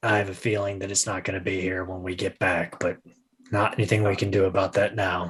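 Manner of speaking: very low, quick murmured mutter. Player voicing a character nodding back toward the Shadow Boys, very low voice. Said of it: "in a very low voice".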